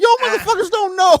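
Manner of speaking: over-the-top put-on voice, very high, very loud, booming.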